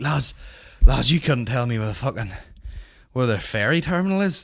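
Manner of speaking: put-on out-of-breath voice. Retelling a man sprinting up to ask directions: imitating someone out of breath. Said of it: "all out of breath".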